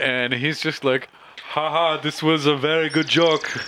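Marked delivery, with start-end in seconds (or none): 1.4-3.5 put-on Austrian accent, pitched a bit high. Narrating a nervous Lamb laughing off a joke, in Lamb's Austrian accent. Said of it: "do the Austrian accent".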